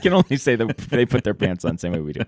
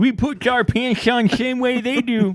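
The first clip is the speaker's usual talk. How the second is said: very high-pitched, slow, drawling voice; 13 semitones higher than usual. Pitching Lou Holtz as medical officer, quoting him: Lou Holtz impression. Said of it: "that's a pretty good Lou Holtz".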